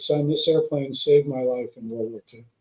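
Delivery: ordinary delivery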